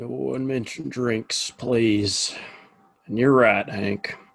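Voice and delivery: words pushed out through a pleading groan. Greeting everyone the morning after too many drinks last night: groaning.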